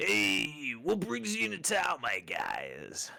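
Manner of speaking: put-on slurred, drunken speech. Voicing Eli greeting the newcomers in town, drunk slurring. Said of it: "kind of slurring come, some of his words".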